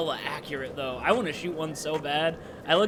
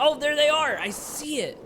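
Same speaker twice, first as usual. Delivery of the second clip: yelling, higher and louder; 11 semitones higher, 5 dB louder than usual. Reacting while playing a game, shouting out. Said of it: "you shouting out".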